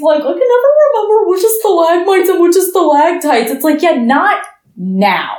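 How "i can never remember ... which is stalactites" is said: high, fast, clueless babbling. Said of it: "ask dumbass questions".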